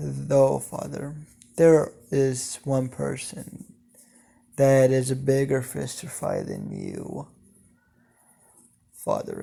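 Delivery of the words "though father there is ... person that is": plain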